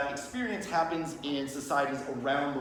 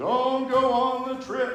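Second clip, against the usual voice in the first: very slow, high, spooky ghost voice; 10 semitones higher, 7 dB louder than usual. Describing a dream, the speaker voices a dead grandmother's warning: ghost voice. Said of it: "That's my ghost voice".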